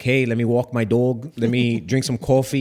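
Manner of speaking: put-on heavy New York accent, laid on thick. Describing a girl who moved from Brooklyn to Florida; thick New York accent. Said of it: "she had that thick New York accent, like".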